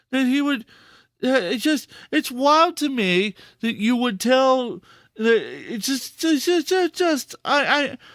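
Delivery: stammering, caught on repeated words, at a loss. Reacting to a wild statement, stuttering, at a loss for words. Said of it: "I'm stuttering 'cause I'm at a loss for words".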